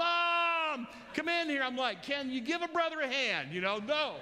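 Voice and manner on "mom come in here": high, bloody-murder shriek with "Mom" stretched long. Speaker retelling how his sister screamed for Mom: acting out bloody-murder screaming. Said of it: "she starts screaming bloody murder".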